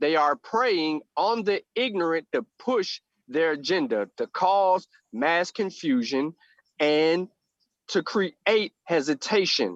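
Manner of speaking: very slow, measured, deliberate, word by word. Speaker announces he will say this very slowly: very slow and deliberate. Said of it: "I'm going to say this very slowly".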